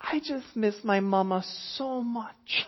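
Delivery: acted, very high, tearful, weepy little-kid voice. A parent retells what the daughter says after calming down; imitating a weepy child. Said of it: "in this weepy voice".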